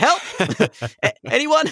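mock, very high, swooping, loud yell. Retelling calling for help over a woman who collapsed on stage: imitating own yelling for help. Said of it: "start just yelling".

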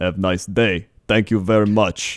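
put-on Greek accent. Speaker retelling what the smoothie man said handing over food, in a Greek accent. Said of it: "I like your Greek accent".

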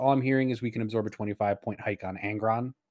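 ordinary delivery

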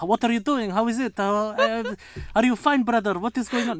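put-on high Middle Eastern accent. Discussing accents, demonstrating a Middle Eastern accent. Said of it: "It's more Middle Eastern".

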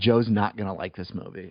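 plain

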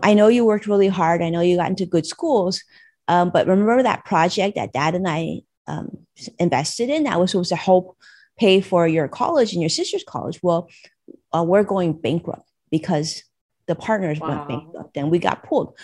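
normal talking voice

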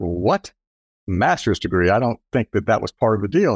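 ordinary talk

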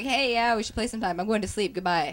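incredibly nervous, fast, hurried delivery. Retelling how he answered in a private chat: imitating nervous speech. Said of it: "became incredibly nervous and was like".

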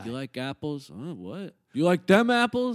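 very loud, mocking taunt with big swoops. Quoting a movie scene the group is discussing: imitating Will Hunting. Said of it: "I think he nailed the delivery".

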